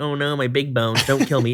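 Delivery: ordinary talk, nothing marked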